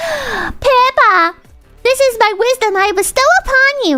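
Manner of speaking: very slow, high, overdone lofty teacher voice. Retelling what teachers used to say: exaggerated imitation of a teacher. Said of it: "They didn't say it like this, but it, it adds to the effect".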